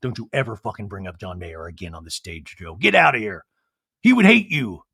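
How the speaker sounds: angry snapping outburst, pitch rising. Retelling Andy finally getting angry at Joe: imitating Andy getting angry. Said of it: "Andy finally gets angry".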